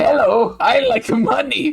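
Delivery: high-pitched animated cartoon crab voice. A co-host, just praised for the voice, doing it again, in a Eugene Krabs voice. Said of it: "You're doing a very good Eugene Krabs".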